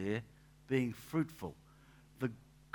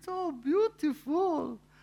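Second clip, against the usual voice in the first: put-on Maltese woman's accent, much higher; 7 dB louder than usual. Retelling a Maltese lady's remark on the back veranda, in Rena's Maltese accent. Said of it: "in her Maltese accent".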